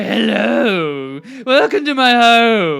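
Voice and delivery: slow, loud, drawn-out voice. Describing a house tour as if Vincent Price answers the door: Vincent Price voice. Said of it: "it's like Vincent Price answering the door".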